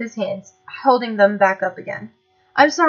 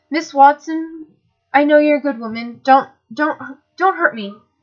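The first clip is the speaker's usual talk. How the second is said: feeble, weak, trembling, shaky voice; 4 semitones higher than usual. Narrator reading James's line to Miss Watson, in a weak, shaky voice. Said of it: "James said in a weak, shaky voice".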